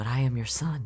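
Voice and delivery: whispering. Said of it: "Law stage right whispers to you".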